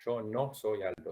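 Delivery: slow, proper Spanish with "no" stressed. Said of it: "sería en español".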